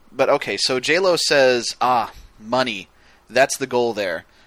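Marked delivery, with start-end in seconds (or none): 1.8-4.2 put-on, thickly sarcastic tone. Recapping a scene, the speaker acts out one woman's reply: imitating heavy sarcasm. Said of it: "really sarcastically".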